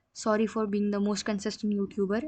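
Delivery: ordinary delivery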